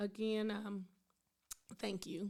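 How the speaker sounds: voice catching, choked up with emotion. Thanking someone for their kind words, choked up. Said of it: "I'm just getting choked up right now".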